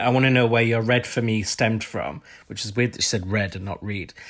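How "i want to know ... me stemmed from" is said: normal talking voice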